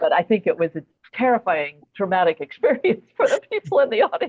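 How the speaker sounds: speaking through bursts of laughter. Recalling a moment that made everyone backstage laugh, laughing while talking. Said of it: "Sorry, I'm laughing".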